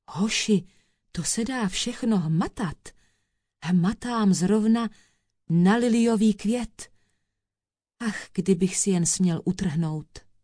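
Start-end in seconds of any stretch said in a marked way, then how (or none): none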